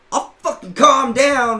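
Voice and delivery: very loud, very high, drawn-out yell. Retelling an argument over overpriced cards: retelling own yell. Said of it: "I started fucking yelling".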